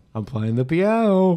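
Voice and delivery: high ventriloquist thrown voice. Player throwing their voice so it seems to come from the piano player. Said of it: "make it sound like this sentence is coming from the piano player".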